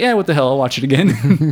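normal talking voice

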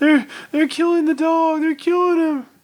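acted sobbing shriek, very high crying scream. Retelling what a woman said when she came running in, imitating someone crying and screaming. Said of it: "came running in the house crying".

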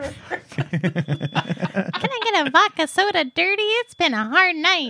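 high, sing-song voice. Asked what he would order at a bar, answering in a Mickey Mouse voice. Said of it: "What would make you order at a bar?".

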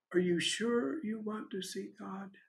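very quiet, soft delivery. Retelling her reply in a remembered conversation: said very quietly. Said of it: "she said very quietly".

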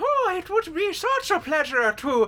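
very high-pitched put-on Irish accent. Asked by a co-host to close the podcast, doing a Leprechaun Irish accent. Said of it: "it's too good of an Irish accent".

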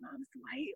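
very quiet, hushed whisper, barely audible. Retelling what the son's friends whispered to him: imitating a whisper. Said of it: "I hear them whispering to him".

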